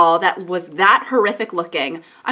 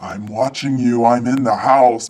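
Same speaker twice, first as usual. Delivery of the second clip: sinister, creepy, very low voice; 10 semitones lower than usual. Acting out a caller heard over the phone, in a creepy phone voice. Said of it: "a creepy voice".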